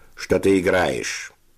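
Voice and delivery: contemptuous, through clenched teeth. Sevochka asks another player a question at the start of a game; through gritted teeth, contemptuous. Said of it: "процедил сквозь зубы Севочка с бесконечным презрением".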